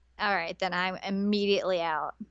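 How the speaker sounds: ordinary talk, nothing marked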